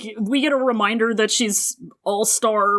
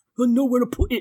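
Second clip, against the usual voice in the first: put-on brooding hero voice; 2 semitones higher than usual. Retelling a scene where a hero answers where his sword is: Jon Snow impression. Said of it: "does a Jon Snow impression".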